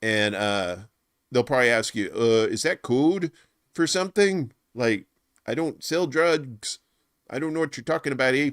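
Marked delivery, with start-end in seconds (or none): 2.5-8.5 put-on good-natured Canadian accent, pitched up. Imagining a neighbor's reply to the listener's question: canadian voice. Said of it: "when I do the Canadian voice".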